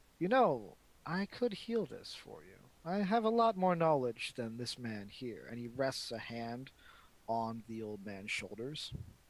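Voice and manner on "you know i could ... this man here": smiling, sing-song, pitched up. Voicing a shadowy dreadlocked creature speaking to a player: smiling voice. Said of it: "you can hear the smile in the voice".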